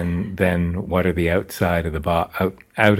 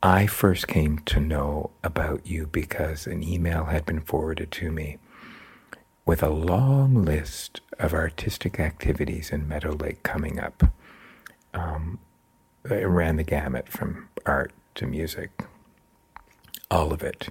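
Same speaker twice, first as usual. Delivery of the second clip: whispered speech; 2 semitones lower, 4 dB quieter than usual. Asking about a community arts email while a baby sleeps nearby: whispering. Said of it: "actually we're just whispering".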